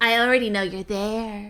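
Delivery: mysterious voice calling out. Voicing a hidden figure who calls visitors to the light: mysterious voice calling out. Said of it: "you suddenly hear a voice going like".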